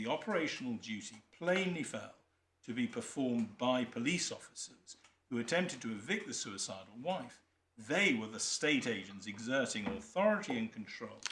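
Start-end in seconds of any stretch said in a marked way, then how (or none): none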